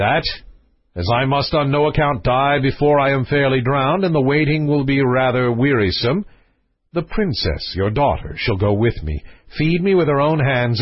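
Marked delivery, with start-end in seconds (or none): none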